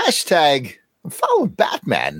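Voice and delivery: actor-style voice with pitch swooping all over. Letting a celebrity voice say the show's hashtag: Christopher Walken impression. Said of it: "I'm going to let Christopher Walken do it for me this time".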